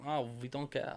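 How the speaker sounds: soft, quiet, bad put-on Swiss accent. Mimicking how people would react, in a bad Swiss accent. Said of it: "That's the worst Swiss accent".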